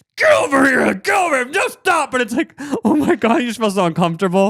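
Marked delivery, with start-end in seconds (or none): 0.2-2.1 play-acted harsh scolding, high and abusive-sounding. Speaker acts out a dog owner yelling at their dog, mock-harsh scolding. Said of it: "goes into like this abusive vibe".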